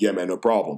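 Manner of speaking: the deepest bass voice, very low. Retelling what the ten-year-old helper said: imitating a very deep voice. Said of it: "just the deepest voice".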